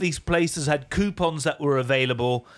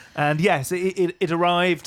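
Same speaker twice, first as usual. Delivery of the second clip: usual speaking voice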